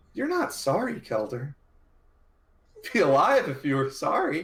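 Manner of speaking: tearful, crying, accusing tone. A narrator voices a character speaking to kelder, crying while speaking. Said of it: "he like starts to cry".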